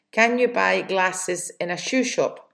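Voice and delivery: plain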